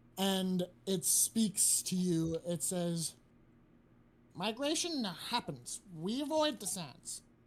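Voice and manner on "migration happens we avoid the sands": talking crow character voice. Playing a crow on someone's shoulder that speaks to Carmen, in a Papyrus voice. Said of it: "I sounded like papyrus".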